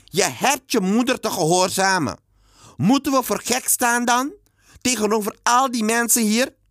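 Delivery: shrill, very high, loud scolding shout. The narrator answers the boy who protested about his shoes, shouting at him. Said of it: "Ik moest tegen hem schreeuwen".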